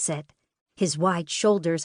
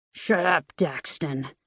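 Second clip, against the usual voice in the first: gruff, rough-edged, dismissive retort; 3 semitones lower than usual. Dario snaps at his twin brother Daxton after being teased; gruff voice. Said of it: "Dario says in a gruff voice".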